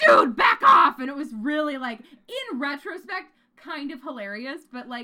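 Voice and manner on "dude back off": very loud, very high-pitched raging scream at full blast. Retelling how someone yelled at people who asked if you were okay, retelling a Hulk-like yell. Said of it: "become the Hulk and yelled".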